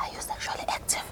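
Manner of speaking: very soft, quick whisper.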